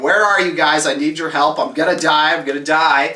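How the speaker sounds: plain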